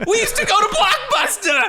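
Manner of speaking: high, loud, laughing rant.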